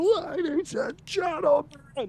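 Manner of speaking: very high, showy announcer voice. Retelling a scene with the announcer heard in the background: imitating the announcer. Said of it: "We hear the announcer in the background".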